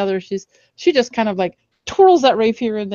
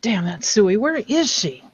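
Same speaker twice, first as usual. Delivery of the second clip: grumbling, muttered under the breath. In a tabletop game, a character takes her turn in combat, muttering under her breath. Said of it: "Loralynn mutters under her breath".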